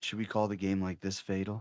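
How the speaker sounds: seductive delivery. Commentators joke about calling the whole game this way, in a sensual voice. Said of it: "Sensual voice".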